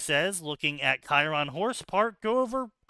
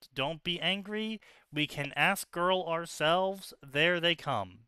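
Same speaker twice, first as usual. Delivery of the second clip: plain reading voice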